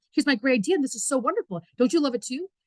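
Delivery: words tumbling out fast with excitement. Showing how a presenter sounds when rushing: talking too fast, excited. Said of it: "You talk so fast 'cause you're so excited".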